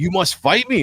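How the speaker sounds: desperate, high-pitched, pleading begging. Retelling the chieftain's words in a fight: imitating someone begging. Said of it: "the chieftain just begging you".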